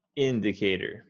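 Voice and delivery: first syllable of indicator leaned on. Tutor modeling word stress for an English learner, stress on first syllable of indicator. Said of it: "You want to emphasize the first syllable".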